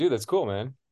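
ordinary delivery

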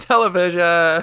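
play-acted pained shout, sudden shrill yelp, very high, loud. Retelling how another speaker sounded on a segment intro: imitating someone yelling out. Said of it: "you yelled out".

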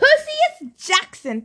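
loud, high, furious, storming angry yell. Narrator reads Thalia storming toward Percy, angry yell. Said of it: "Thalia yelled".

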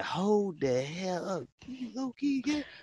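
slow, baffled, puzzled, confused delivery. Retelling own reaction to a girl's jokes: retelling a confused reaction. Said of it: "You sound like you're really confused".

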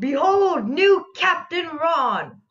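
high, shouted, announcer-like calling out. Narrating a character who rushes out of the captain's quarters to the ship, shouting out an announcement. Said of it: "shouts out".

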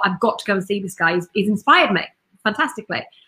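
normal talking voice

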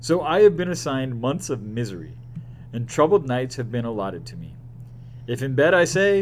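ordinary delivery

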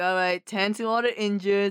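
ordinary talk, nothing marked

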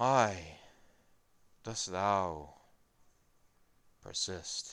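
very slow corpse voice, echoing as in chamber. Voicing a corpse whose jaw moves, questioning the players: echoing corpse voice. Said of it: "the voice begins to, like, echo throughout the chamber".

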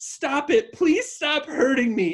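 high, hysterical, pleading scream. Retelling what the neighbors heard, the speaker acts out a screaming plea. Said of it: "There was screaming".

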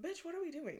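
put-on squeaky, very high old talking-dog voice. Telling about early walks, speaking as her senior dog. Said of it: "He's like".

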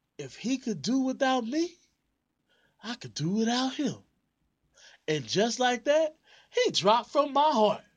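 very high, swooping, dramatic character voice. Redoing a performed scene before calling end scene; runaway slave character voice. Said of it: "I gotta get back into my runaway slave voice".

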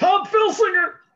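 very loud, shrill, high-pitched yelling holler. Retelling a friend yelling a name out of the car: imitating Steve yelling. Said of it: "he's just yelling "Tom Filsinger"".

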